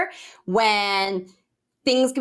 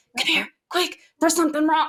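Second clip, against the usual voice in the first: put-on urgent whisper, higher; 6 semitones higher than usual. Retelling how the photographer whispered about a problem: imitating someone whispering urgently. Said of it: "whispering as quietly as she could".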